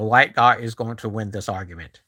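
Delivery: normal talking voice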